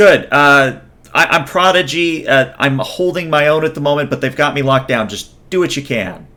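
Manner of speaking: fast, panicked woman's voice. A game master voices Prodigy, locked down, answering the arriving squad: panicking female voice. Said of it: "a panicking female voice".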